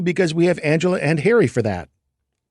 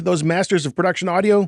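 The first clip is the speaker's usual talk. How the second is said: normal talking voice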